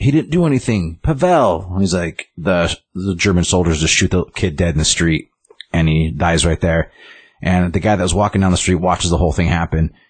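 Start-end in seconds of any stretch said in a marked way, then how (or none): 0.0-1.7 put-on high yell, calling out. Retelling a film scene where a mother yells at soldiers: imitating a mother yelling. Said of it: "the mother yells".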